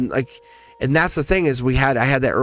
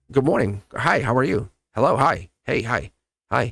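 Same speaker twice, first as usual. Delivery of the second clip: put-on very nice manner. Describing someone about to quit a job, acting out greetings; acting very nice. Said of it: "I'm going to be very nice".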